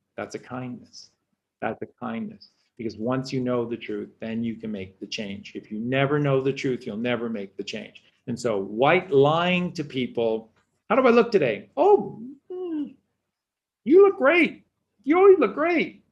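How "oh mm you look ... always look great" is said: voice shooting way up, very high. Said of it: "I don't know why my voice goes high like this when I lie".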